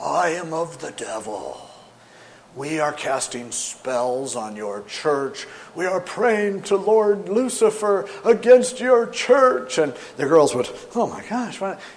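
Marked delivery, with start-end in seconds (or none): 0.0-9.8 eerie, spooky, very slow and dragged out. A Church of Satan caller phoning the church office, spooky voice. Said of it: "he would talk in this spooky voice and say".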